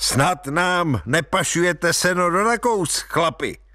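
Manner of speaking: jovial, hearty teasing. A border lieutenant greets a man driving a hay cart, jovial and hearty. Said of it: "se rozhodl předvést jako bodrý chlapík".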